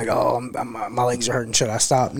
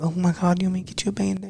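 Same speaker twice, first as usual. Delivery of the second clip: high, fussing, doting mom voice; 7 semitones higher than usual. Contrasting how parents react when a kid falls and gets hurt, imitating a mom. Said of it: "Like moms all".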